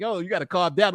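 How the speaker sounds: ordinary delivery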